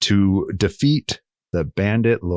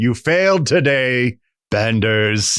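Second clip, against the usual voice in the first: very slow, taunting, mocking bandit-leader villain voice. Narrating a game scene, speaking as the bandit leader to the Benders: mocking bandit leader voice. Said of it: "You just hear the mocking voice of the bandit leader".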